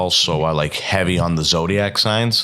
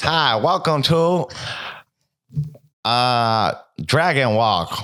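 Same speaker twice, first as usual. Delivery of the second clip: put-on, mock Chinese accent; 6 semitones higher than usual. Podcast host asked to do the intro, in a mock chinese accent. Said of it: "give me your best fucking Chinese impression".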